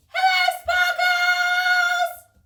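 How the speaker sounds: biggest, loudest voice, pitched very high. A host leads the boys and girls in greeting sparkles, biggest, loudest voice. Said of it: "in your biggest, loudest voice".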